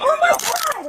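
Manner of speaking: very high, shrill, distressed yell. Protesting being detained by cops: yelling. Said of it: "Stop yelling".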